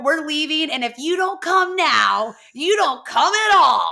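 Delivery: high-pitched, loud screaming. Retelling a sister breaking down the door: imitating Kelly screaming. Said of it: "basically breaks down the door screaming".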